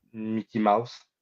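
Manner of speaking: speaking with a French accent. Answering what the French for Mickey Mouse is: French accent. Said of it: "Mickey Mouse with a French accent".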